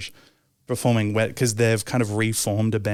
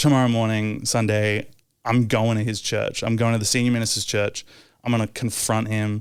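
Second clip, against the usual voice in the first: normal talking voice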